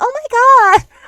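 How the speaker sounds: over-the-top feminine voice, very high, loud squeal. Describing how she reacts when women seem afraid of her: exaggerated feminine voice. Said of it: "I s- probably sound like a twink".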